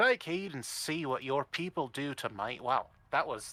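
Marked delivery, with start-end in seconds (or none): 0.0-2.6 slow, drawn-out, put-on Scottish chieftain voice. Voicing a character for the group, in a scottish accent. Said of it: "That's Scottish".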